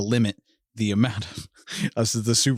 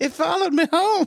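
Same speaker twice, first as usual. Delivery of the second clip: mocking, very high-pitched voice; 3 dB louder than usual. Mocking a little psychic who blesses a haunted home: Zelda Rubinstein impression. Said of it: "I was making fun of Zelda Rubinstein".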